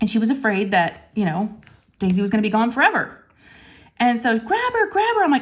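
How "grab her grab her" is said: put-on very high, shrill, tearful screaming. Retelling a frantic moment with a loose hamster: imitating someone screaming. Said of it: "she starts screaming and crying".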